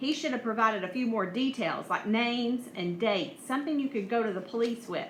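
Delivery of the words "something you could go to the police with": plain reading voice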